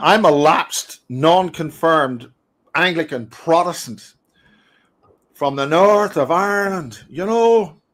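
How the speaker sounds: deliberately laid-on put-on South Dublin accent. Speaker introducing themself, put-on South Dublin accent. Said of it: "deliberately putting on a South Dublin accent there".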